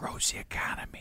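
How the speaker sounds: slow, high, drawn-out stage whisper. Joking about switching to a whisper at will: imitating Joe Biden whispering. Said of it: "I can go from regular talk to whispering".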